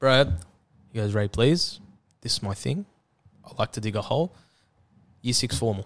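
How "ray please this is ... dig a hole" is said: imitated voice speaking very calmly. Retelling a friend's reply to an offer of help: imitating a friend speaking very calmly. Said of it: "Very calmly".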